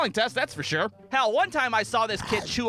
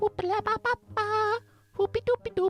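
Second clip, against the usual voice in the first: mock whispering nonsense, higher pitch; 11 semitones higher than usual. Retelling how a classmate whispered during a math test: imitating a classmate's whispered gibberish. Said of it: "Colby's ass would be like".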